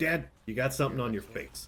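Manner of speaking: plain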